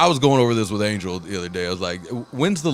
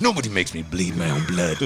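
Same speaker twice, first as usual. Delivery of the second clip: low, dropped-pitch movie villain voice; 4 semitones lower, 4 dB quieter than usual. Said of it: "good job of that".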